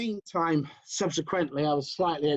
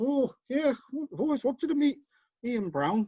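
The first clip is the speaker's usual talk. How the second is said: put-on Geordie accent, much higher pitch; 8 semitones higher than usual. Retelling Alan's reply after being asked to come along, imitating Alan's Geordie accent. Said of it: "That's my best Geordie accent".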